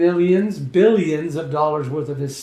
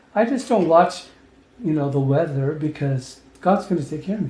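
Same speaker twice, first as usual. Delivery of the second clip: usual speaking voice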